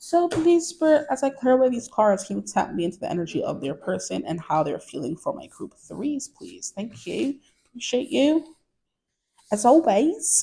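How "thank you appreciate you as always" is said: fake British accent, pitched up. Thanking Spirit while clearing away the cards, in a put-on British accent. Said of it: "Spirit gets my British accent".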